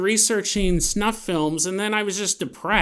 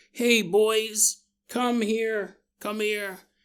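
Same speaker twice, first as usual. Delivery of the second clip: put-on sick, frail, weak voice; 3 dB quieter than usual. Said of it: "mom's all, like, sick, frail".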